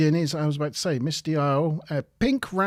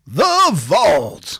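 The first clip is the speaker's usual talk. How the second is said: very loud, dramatic, booming game-show host voice; 3 semitones higher, 9 dB louder than usual. Asked to say the Vault like a game show, game show announcer voice. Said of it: "that's like your game show voice".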